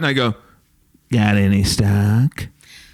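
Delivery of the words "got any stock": loud, belted-out put-on voice. Acting out a line said around town: Steve Urkel voice. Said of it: "are you being Steve Urkel?".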